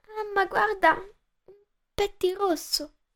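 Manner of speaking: soft murmur, barely smiling. A little girl clinging to her mother murmurs to her, faintly smiling. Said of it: "Mormorò, sorridendo appena".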